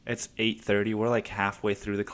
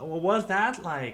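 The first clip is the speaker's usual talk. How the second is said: acted loud shouting with raised pitch; 8 semitones higher than usual. Retelling a first date at a loud salsa club: imitating someone yelling over music. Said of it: "she's yelling in my fucking ear".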